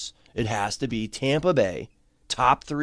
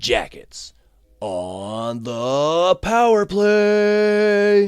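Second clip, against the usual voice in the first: horrible, loud, very slow arena announcer voice; 7 semitones higher, 5 dB louder than usual. Speaker mimics the announcer's power play call over the mic: bad announcer impression. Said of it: "my horrible, horrible impression".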